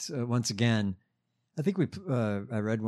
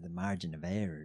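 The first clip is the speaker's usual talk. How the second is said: put-on Southern accent, lower and quieter; 5 semitones lower, 10 dB quieter than usual. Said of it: "The Lindsey voice".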